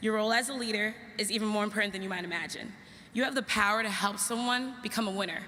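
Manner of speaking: ordinary talk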